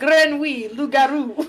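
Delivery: mock schoolbook French. Imitating teens wandering around saying random French words: imitating teens' nonsense schoolbook French. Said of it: "walking around like".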